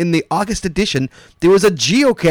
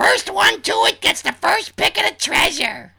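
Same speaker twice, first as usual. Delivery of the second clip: put-on high, slow girl voice. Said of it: "I'll be Dina".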